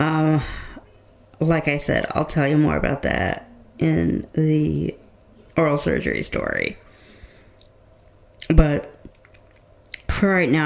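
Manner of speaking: impaired, labored speech. Describing dental complications, talking with difficulty after dental work. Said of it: "I'm not gonna keep trying to talk like this".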